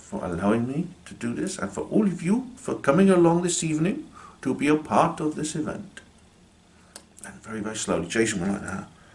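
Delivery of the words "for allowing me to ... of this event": put-on cultivated, polished Indian accent, pitched up. Retelling a spirit's farewell spoken through a medium: imitating a deep, educated Indian voice. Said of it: "in this really deep, educated Indian voice".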